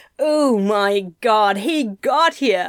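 very slow, drawn-out exclaiming. Narrator reads a character reacting to someone's arrival; exclaimed. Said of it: "Anathema exclaimed".

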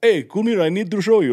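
put-on Arabic-accented speech.

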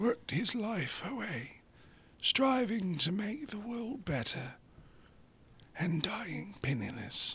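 soft, slow, unhurried wise wizard voice, British accent. Speaker continues a story about Nikola, Dumbledore-like British accent. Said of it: "That's Dumbledore".

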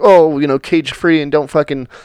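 ordinary talk

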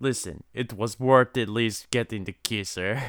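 clumsy, bad, fake Russian accent. Retelling a film character's line to another speaker: put-on Russian accent. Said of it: "Yours was a Russian voice".

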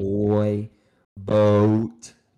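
long O stretched in toy boat.

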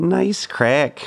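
Minnesotan accent. Challenging another speaker to try the phrase, saying it in a Minnesotan accent. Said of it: "say nice crack in your best Minnesotan accent".

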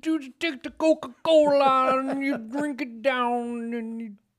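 put-on voice drifting into a Jamaican accent. Recalling an old ad selling new Coke; Bill Cosby impression, sounding Jamaican. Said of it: "Is that Jamaican".

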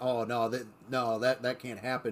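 ordinary talk, nothing marked

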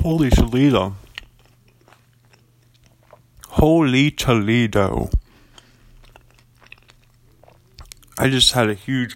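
talking while chewing, mouth full. Eating coleslaw pizza at the mic, reacting to a huge bite: talking while chewing. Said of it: "Sorry about chewing on the mic".

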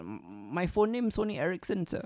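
put-on high, slow sobbing in broken English. Retelling a man's answer after being screamed at, imitating someone crying. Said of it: "he's crying his eyes out".

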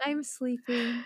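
hushed, gentle ASMR delivery. Retelling answering a sweet doctor while half asleep: retelling in an asmr voice.

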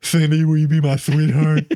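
forced, put-on voice trying to sound deep. Acting out a third grader giving a Valentine: put-on deep voice. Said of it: "Why is your voice so deep?".

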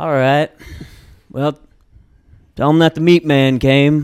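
loud, mysterious character voice. Imitating a stranger who talks like a Matthew McConaughey character. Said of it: "like a Matthew McConaughey character".

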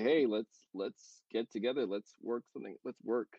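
ordinary talk

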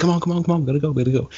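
high-pitched, rushed, urgent, hurried delivery.

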